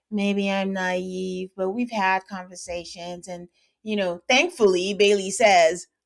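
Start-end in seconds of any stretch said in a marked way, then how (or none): 0.1-3.2 level, expressionless, flat monotone delivery. Retelling a conversation, the speaker quotes Amanda in her monotone voice. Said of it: "in her um, monotone voice".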